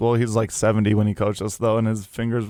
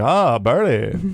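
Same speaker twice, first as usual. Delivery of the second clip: acted old man coach voice; 3 dB louder than usual. Retelling how an old basketball coach with broken pinkies talked: imitating John Butterfield. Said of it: "He's like".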